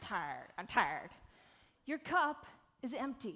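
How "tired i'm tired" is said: very low, deep, slack, lazy Australian drawl. Showing an audience how to say the word tired: really lazy Australian accent. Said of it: "it's kinda like really lazy Australian".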